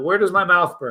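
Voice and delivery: ordinary talk, nothing marked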